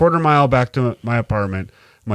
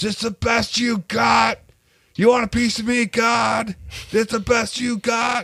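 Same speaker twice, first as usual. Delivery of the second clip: mock very high-pitched drunken screaming; 12 semitones higher, 4 dB quieter than usual. Recalling being drunk out in the cold, speaker reenacts screaming at god. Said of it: "I remember screaming".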